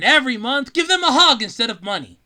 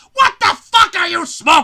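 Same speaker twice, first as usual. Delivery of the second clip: shrill, loud, belted put-on voice; 5 semitones higher, 6 dB louder than usual. Ranting about cheerful musicals, doing a Gilbert Gottfried impression. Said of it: "my best Gilbert Gottfried impersonation".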